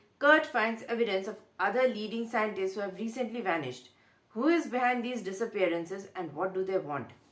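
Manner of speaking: ordinary talk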